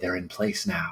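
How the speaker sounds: whispering. Voicing a character whispering to someone unseen at their side: whispering. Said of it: "I'm just sort of whispering on my right".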